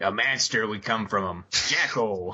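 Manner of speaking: slow, drawn-out put-on New York accent. Imagining a horror-movie line at a campfire, in a new york accent. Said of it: "hearing a like New York accent say".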